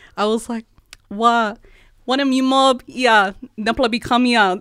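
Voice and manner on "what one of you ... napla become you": loud Torres Strait Creole, broken English. Retelling how they slipped into Torres Strait broken English on air. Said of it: "started speaking in like broken English".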